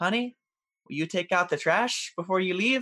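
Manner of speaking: unruffled, lightly rising pitch. Retelling a wife asking her irritated husband before work, imitating a calm wife. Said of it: "his wife calmly asks him".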